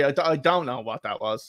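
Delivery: ordinary delivery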